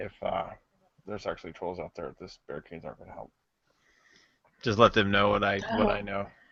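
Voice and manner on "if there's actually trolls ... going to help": low, very quiet mutter under the breath. Slinking back toward the party to warn them: in character, under breath. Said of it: "under my breath, quietly".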